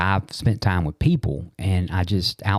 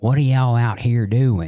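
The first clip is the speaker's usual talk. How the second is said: put-on tiny, small-voiced called-out yell, country accent; 4 semitones higher, 4 dB louder than usual. Recalling a mom calling from the patio, retelling a yell in a small country voice. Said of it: "yelling in a very small voice and country accent".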